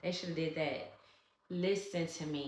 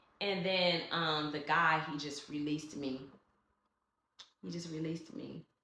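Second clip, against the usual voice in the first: ordinary talk, nothing marked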